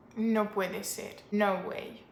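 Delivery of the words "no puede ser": normal talking voice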